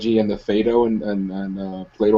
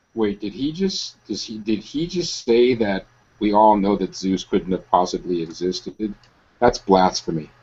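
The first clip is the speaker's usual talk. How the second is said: ordinary talk, nothing marked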